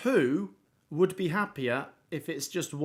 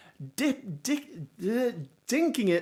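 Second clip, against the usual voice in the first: pitched-up, stumbling stutter, words tripping over each other; 7 semitones higher than usual. A commentator calling a goal as it is scored, stuttering. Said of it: "as I stutter there".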